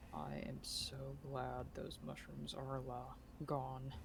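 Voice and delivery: slow, soft grumbling mutter under the breath. Voicing a character muttering to a companion: muttered under his breath. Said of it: "mutters under his breath".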